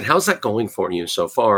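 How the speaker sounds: plain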